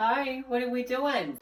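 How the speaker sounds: put-on slow high-pitched baby voice.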